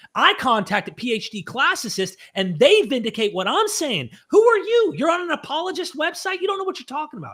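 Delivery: agitated, worked up. Arguing against a critic on an apologist website, getting worked up. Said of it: "I'm getting worked up".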